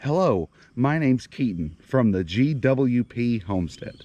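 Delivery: slow, careful, deliberate, unhurried pace. Showing someone how to say their introduction, slow deliberate delivery.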